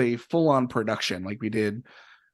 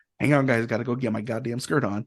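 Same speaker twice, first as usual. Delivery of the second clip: put-on muttering under the breath. Retelling a glee club member's remark as she walks off stage, imitating muttering under breath. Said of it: "says it very underneath her breath".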